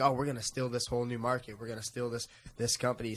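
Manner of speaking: ordinary talk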